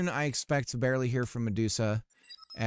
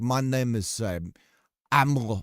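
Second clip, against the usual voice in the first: slow put-on Eastern European accent slipping into French; 5 dB louder than usual. Telling someone how they had imagined his voice, attempting an Eastern European accent. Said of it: "I'm trying to do like a an, an Eastern European accent".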